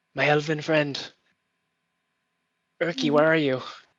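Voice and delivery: half-whispered calling out. Voicing a gnome calling into fog: half whisper calling out. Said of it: "in kind of a ha-, half whisper, kind of calling out to you".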